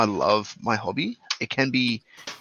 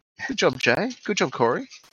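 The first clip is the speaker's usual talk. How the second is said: high-pitched, sarcastic-sounding delivery; 7 semitones higher than usual. Praising the other speakers by name: sarcastic-sounding praise. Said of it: "It did sound very sarcastic".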